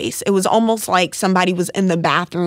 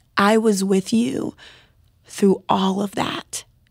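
put-on gentle, loving, tender voice. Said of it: "it spoke to me in such a gentle, loving way".

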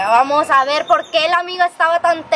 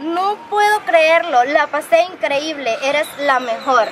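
usual speaking voice

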